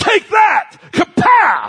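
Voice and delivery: high-pitched, loud, belted cartoon blast. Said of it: "He finds what he's looking for and goes".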